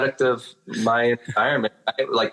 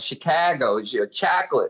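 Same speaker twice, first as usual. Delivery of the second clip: Chicago accent with pitch raised up. Showing how he says a word he was teased for, in his Chicago accent. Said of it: "it's that Chicago accent".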